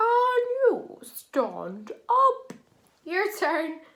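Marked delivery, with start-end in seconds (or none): 0.0-2.5 goofy, very high-pitched and very slow silly voice. Leading a group through a repeat-after-me sentence, now in a funny voice. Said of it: "This time a funny voice".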